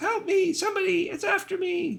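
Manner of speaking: very high, squeaky, breathless gasps, drawn out. Reading out a fleeing goblin calling for help: squeaky, gasping for breath. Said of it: "The voice is squeaky and gasping for breath".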